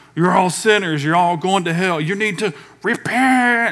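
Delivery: full, ranting, screaming harangue voice. Describing a man on a bench addressing college students, imitating someone screaming. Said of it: "and he's screaming at people".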